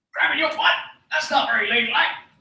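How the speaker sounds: bad, terrible, very high, squeaky cartoon voice. A speaker answering his own words, in a terrible Bubs impression. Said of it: "That was a terrible Bubs impression".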